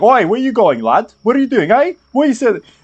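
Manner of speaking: very high, loud grunting, protesting tone. Voicing people in a queue protesting someone skipping ahead: grunting complaint. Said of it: "some people even grunt, like".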